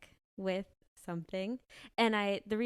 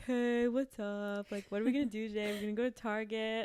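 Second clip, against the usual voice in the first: groggy, sleepy, half-awake voice. Retelling own words after waking up at home: imitating a groggy voice.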